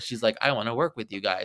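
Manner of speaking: ordinary talk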